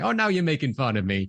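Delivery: hammed-up, ditzy airhead American blonde voice. Speaker recounting a scene where an actress plays the part, imitating a ditzy blonde. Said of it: "hamming up this ditzy blonde".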